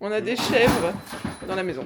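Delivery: loud, high, panicked laughing.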